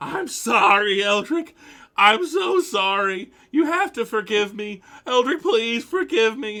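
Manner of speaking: very loud, very high crying wail, sobbing shout. The narrator voices a man clinging to Eldrick's legs and begging forgiveness, sobbing and shouting. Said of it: "is still just just shouting and crying".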